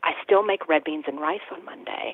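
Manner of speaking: hushed, soft half-whisper, secretive. Retelling how a customer in the store answered: imitating a woman half-whispering. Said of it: "And she whispered".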